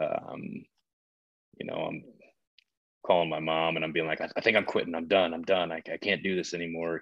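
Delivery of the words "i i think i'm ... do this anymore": put-on panicked voice. Retelling calling mom about quitting: imitating own past panic. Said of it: "I'm panicking".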